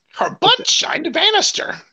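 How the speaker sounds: very high-pitched cartoon mother voice. Talking about a Simpsons episode on a show, do a Marge impersonation. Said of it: "That's your Marge impersonation".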